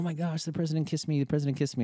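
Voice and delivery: giddy, high, rushed, excited gushing squeal. Retelling a wife prancing over after a kiss: imitating wife's excited gushing. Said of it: "she starts prancing over to me".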